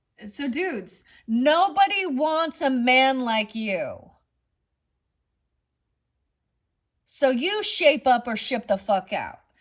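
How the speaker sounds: shouting angrily. Calling out men who hurt women during a card reading: yelling. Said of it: "now I'm yelling".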